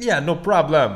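put-on loud, high Jamaican accent. Retelling a podcast anecdote, voicing a local radio station worker's reply, in a Jamaican accent. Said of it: "that's as much of a Jamaican accent as I'm willing to do".

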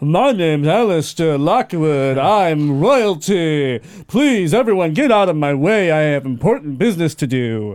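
pompous, puffed-up, grand royal proclaiming tone. Showing a companion an impression of Alistair: imitating Alistair's pompous manner. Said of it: "I pump my chest out like Alistair would".

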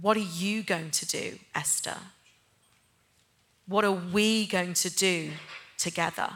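soft, tender, gentle and quiet voice. Retelling what God would say when the speaker listened; imitating God's gentle, quiet voice. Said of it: "in a really gentle, quiet voice".

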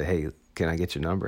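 ordinary talk, nothing marked

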